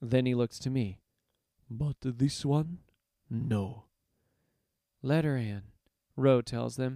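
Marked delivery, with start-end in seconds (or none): 1.7-3.8 low, soft, slow, soft-spoken voice. Narrating a door guard turning away a newcomer, in a low, soft voice. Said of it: "We reach the door, barred by a pair of brutes. They are armed, one augmented with a claw of burnished iron, ... his voice low and soft despite his aggressive bulk".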